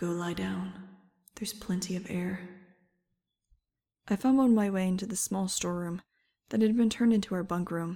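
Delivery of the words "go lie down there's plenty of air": soothing, calming, quieter and slower. A voice reassures someone who is panicking, soothing. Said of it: "said the voice soothingly".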